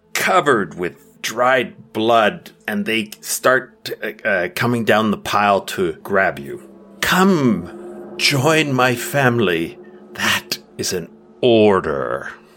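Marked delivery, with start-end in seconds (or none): 7.0-12.2 cold, slow, reverberating voice stripped of sweetness. Voicing a creature ordering the heroes to join its family: voice with no sweetness, reverberating. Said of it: "the voice drops any sweetness".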